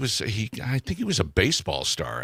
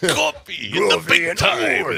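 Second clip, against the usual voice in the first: rough, very high, dragged-out drawl; 10 semitones higher, 6 dB louder than usual. Repeating a line in imitation of the Macho Man: Macho Man voice. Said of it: "The Macho Man".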